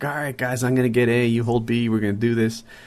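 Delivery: commanding, authoritative tone. Retelling rallying teammates on the mic: imitating own lieutenant-style rallying. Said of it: "put on my lieutenant hat".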